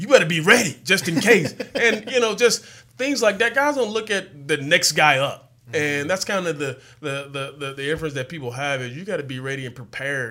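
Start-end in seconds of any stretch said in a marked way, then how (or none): 0.0-1.5 loud, hollered yell, shouted out. Recalling a player yelling at him on the sideline: imitating someone shouting. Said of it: "he's yelling at me like".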